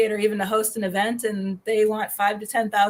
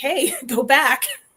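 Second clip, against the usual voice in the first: mild, urgent calling-out voice; 4 semitones higher than usual. Retelling a show going to commercial: imitating own yelling at TV. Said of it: "I'm yelling at the T V like".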